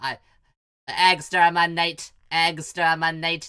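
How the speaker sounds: loud, flat, level, dumb sci-fi robot monotone. Showing the voice he does for the little robot Skeets, a Dalek robot voice. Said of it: "I do this dumb robot voice for that I just try to like almost like into like a Dalek".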